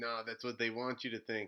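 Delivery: ordinary delivery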